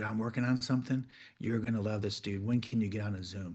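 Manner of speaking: low, very hushed, confiding tone, dropped pitch. Showing voice techniques for a secret pitch: Nate impression, lowered tone. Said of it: "I lower my my tone".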